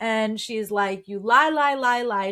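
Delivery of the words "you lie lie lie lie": mock full-on screaming, hammering repetition. Retelling a character yelling at the entire room: imitating someone screaming. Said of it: "She starts screaming".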